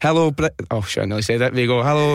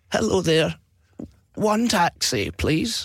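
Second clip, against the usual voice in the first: slow, put-on old man's voice; 4 semitones higher, 3 dB quieter than usual. Retelling how you used to phone for a taxi, pretending to be an old guy. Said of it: "pretend to be an old guy".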